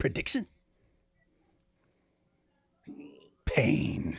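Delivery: breathy, threatening whisper in a tough voice. Retelling Mr. T's answer when asked for his fight prediction, Mr. T impression. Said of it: "He goes".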